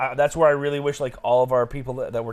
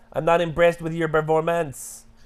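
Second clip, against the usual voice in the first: put-on Quebecois French accent; 4 semitones higher than usual. Speaker does an impression while talking about French accents, Georges St-Pierre Quebecois accent. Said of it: "That's definitely Quebecois".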